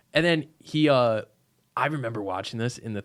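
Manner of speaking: ordinary talk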